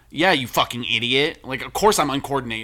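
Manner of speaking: put-on snide voice. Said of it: "why is she being an asshole?".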